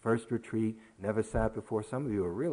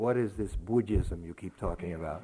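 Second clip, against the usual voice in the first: put-on thick, heavy Russian accent; 3 semitones lower than usual. Quoting a close friend who keeps asking you a question, thick russian accent. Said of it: "keeps asking in a thick Russian accent".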